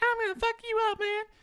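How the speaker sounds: put-on very high child's voice. Retelling insults heard in online gaming: imitating a child's voice. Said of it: "from the voice of a child".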